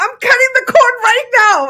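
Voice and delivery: shrill, crazed, very high and loud screaming. Retelling screaming into the ether in the apartment: imitating own past screaming. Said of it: "I started screaming".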